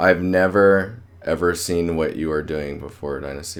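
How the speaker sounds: thick, heavy sarcastic tone.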